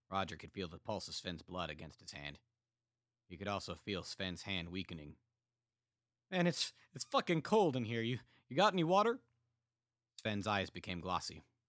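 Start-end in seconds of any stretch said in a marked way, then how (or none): 6.3-9.1 dying soldier voice, very high and very loud. Narrator reads a soldier bleeding from the neck, weakening wounded soldier. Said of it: "despite knowing clearly that [name] was a sociopath. / The bullet had taken [name] by surprise just a moment before, piercing his jugular and knocking him back on his ass. / [name] kept repeating the".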